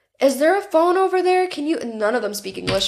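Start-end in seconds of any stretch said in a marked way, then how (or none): 0.2-1.8 shouting with high, raised pitch. Retelling being stuck, the speaker asks people who speak no english for a phone: acting out own screaming. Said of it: "So I'm like screaming at these people".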